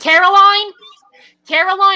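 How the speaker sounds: put-on Brooklyn accent, calling out. Imitating the speaker's grandmother calling Caroline, grandmother's Brooklyn accent. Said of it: "she used to talk like this".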